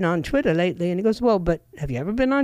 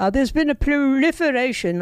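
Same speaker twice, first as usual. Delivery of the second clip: poor put-on British accent, pitched up; 6 semitones higher than usual. Quoting what a man said to another, in a bad British accent. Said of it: "I don't do a British accent very well".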